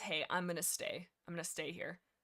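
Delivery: ordinary talk, nothing marked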